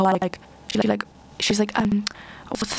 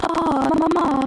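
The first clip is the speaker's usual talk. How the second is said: put-on strange, high-pitched girl voice; 8 semitones higher than usual. Describing a girl in one of the stories, imitate her really strange voice like Mia Goth. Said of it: "her voice is really strange".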